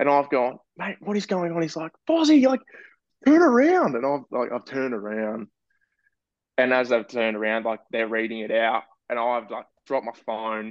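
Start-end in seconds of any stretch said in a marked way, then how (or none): 2.1-4.0 very high scream at the top of lungs. Retelling what he screamed at the speaker during a prank call, retelling a scream. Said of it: "he's screaming at the top of his lungs".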